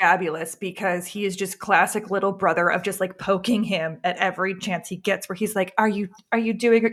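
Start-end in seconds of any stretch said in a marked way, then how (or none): 5.8-6.9 acted, needling, sweetly polite, passive-aggressive tone. Retelling how Kern pokes at Worf: imitating a polite passive-aggressive tone. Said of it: "just so polite, just so passive aggressive".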